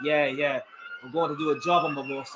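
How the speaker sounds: put-on thick British roadman accent. Quoting a fighter's manager from Hackney: imitating Elliot's roadman British accent. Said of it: "He's got that thick roadman British accent".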